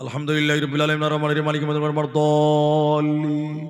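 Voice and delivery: verses run together with no pauses between. Showing how some people join the verses of Surah Fatiha, verses run together without pauses. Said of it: "কেউ আবার এমন জুড়ে দেখেন, ... একদমই শেষ করছে।".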